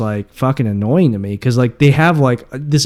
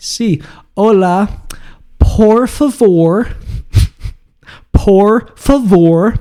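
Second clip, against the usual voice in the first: very slow, halting, drawn out, pitched up; 7 semitones higher than usual. Retelling how an aunt spoke to a waiter: imitating the aunt asking. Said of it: "and she says".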